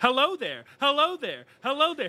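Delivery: very high, sing-song, swooping voice like a looping recording. Voicing a vending machine that only repeats one line: vending machine soundboard voice. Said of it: "he just keeps saying".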